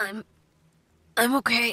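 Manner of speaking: uncertain. Narrating Link, still trembling as he sits up again: uncertain. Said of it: "he said uncertainly".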